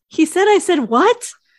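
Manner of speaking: high, loud, incredulous squeak of disbelief. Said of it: "Scully is incredulous".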